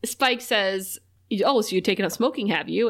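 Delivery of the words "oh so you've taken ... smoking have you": ordinary delivery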